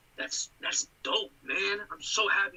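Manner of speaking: slow, sarcastic, insincere-sounding drawl. Reacting to a friend's birthday news: sarcastic. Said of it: "You sound so sarcastic".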